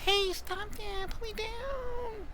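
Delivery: tiny, very high, very soft hushed voice. A kitten protests as an old man picks it up: tiny voice. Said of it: "you hear just like a tiny voice".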